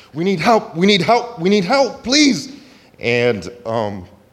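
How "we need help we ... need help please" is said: very high, desperate, panicked screaming. Recounting a woman who ran up to them, imitating her screaming for help. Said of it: "she's screaming at the top of her lungs".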